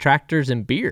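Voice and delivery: stern tone. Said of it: "the most stern tone I've heard my dad".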